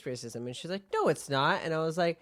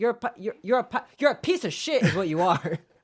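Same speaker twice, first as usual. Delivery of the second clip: acted, loud, high, angry, sputtering, stumbling outburst; 5 semitones higher, 5 dB louder than usual. Retelling a brother's reply to his sister's excuse: imitating someone getting angry. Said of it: "And he got angry".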